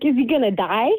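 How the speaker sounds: reined-in, scream-like panicked alarm. Retelling the moment after a shooting: imitating own screaming. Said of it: "I started screaming 'cause I was like".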